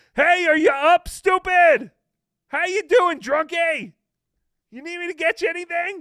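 very high, very loud heckling holler. Teasing John about his trip, the speaker demonstrates yelling from across the casino. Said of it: "I'll be yelling from across the casino".

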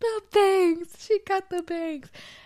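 put-on, very high, loud crying through sobs. Retelling getting in the car after a haircut, imitating themself sobbing. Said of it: "I started sobbing, crying".

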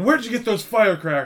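loud, shrill scolding yelling. Retelling a film scene where the mother yells in the car: imitating a mother yelling. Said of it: "she's yelling at him in the car and going".

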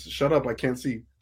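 usual speaking voice

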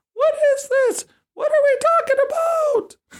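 very high, mocking put-on squeak. Imitating people freaking out in bourbon groups in a put-on high voice. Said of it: "I always refer to them in the high voice".

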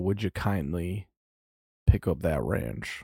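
put-on southern American accent. Speaker recalls how a game line was said, in a southern accent. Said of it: "I think it was more of like a southern".

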